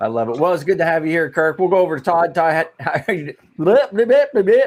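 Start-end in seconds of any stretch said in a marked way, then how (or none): 2.3-4.7 stuttering, high-pitched and silly. A host turns to the next guest to ask how he is, in a Porky Pig impression. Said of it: "I was doing my best Porky Pig impression".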